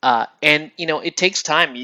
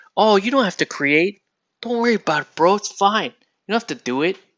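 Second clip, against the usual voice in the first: lazy, easygoing slacker voice, raised pitch; 7 semitones higher than usual. Voicing the slacker in your head: Cheech Marin voice. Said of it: "my impersonation of Cheech Marin".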